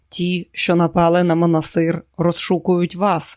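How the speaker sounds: ordinary delivery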